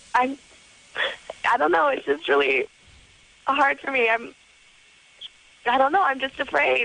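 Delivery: speech broken up by weeping. Answering a caller's question about why she is afraid, crying while talking. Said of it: "So what is it you're crying about?".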